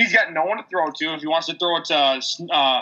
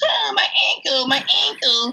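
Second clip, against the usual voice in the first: mock-pained, whining hurt voice; 9 semitones higher than usual. Mocking a player who went down again, in a mock-pained injury voice. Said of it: "I could do that like injury voice all day".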